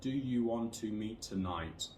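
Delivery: flat, level monotone, no intonation, no stress. Teaching English intonation, reading a sentence flat with no stress. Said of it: "with no intonation and no stress".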